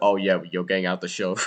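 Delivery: ordinary delivery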